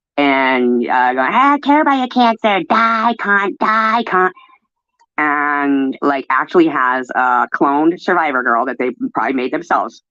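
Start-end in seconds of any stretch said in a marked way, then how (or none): 1.3-4.3 very high, shrill, vicious screaming. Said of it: "that person is screaming".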